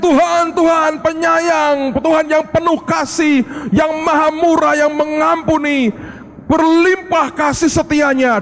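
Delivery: crying out, proclaiming.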